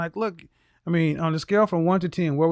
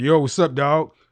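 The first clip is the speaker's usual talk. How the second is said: put-on hard booming voice, louder; 2 semitones lower, 5 dB louder than usual. Imitating the other person's tone back at them: mimicking listener's booming tone. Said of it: "Your your your your tone is like".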